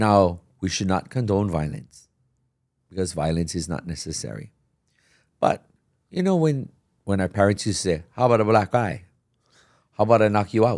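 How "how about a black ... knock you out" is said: put-on sarcastic voice. Retelling what parents used to say: imitating a sarcastic parent. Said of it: "it's sarcastic".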